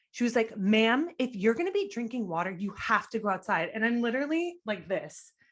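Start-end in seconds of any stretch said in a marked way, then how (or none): 0.6-3.7 put-on aggressive, scolding tone. Retelling what a museum worker told her about the water: imitating an aggressive staff member. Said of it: "was so aggressive".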